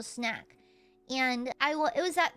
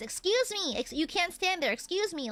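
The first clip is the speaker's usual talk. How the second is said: raised, high-pitched voice; 5 semitones higher than usual. Retelling how a store staff member shouted at people blocking the store: imitating a staff member raising their voice. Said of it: "raise their voice".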